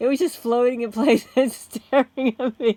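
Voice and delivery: very loud, words broken by laughter. Speaker telling viewers a short personal story, laughing while talking. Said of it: "I'm sorry for laughing".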